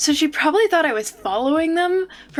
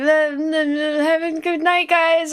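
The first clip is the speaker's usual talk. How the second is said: slow stutter, stumbling on a drawn-out "the-the"; 3 semitones higher than usual. Retelling a nervous goodbye to strangers in a parking lot: imitating own stutter. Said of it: "I stuttered and said something".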